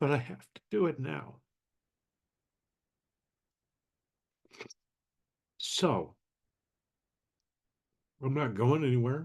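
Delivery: talking through tears. Speaker telling listeners they have to shut it down now, crying. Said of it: "You can tell I'm crying".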